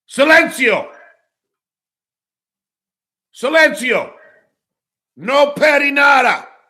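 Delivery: high, loud mock angry yelling. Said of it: ""Oh, [name]'s yelling at," no, I'm being funny".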